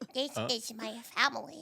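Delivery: soft, tiny cartoon alien creature voice. Showing the others how the cartoon alien sounds; Stitch voice. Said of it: "that's my Stitch".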